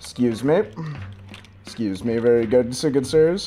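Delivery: low, sly, overly polite, feigned courteous sweet-talking. A self-described sneaky boy taking his leave of the good sirs, overly polite sly bluff.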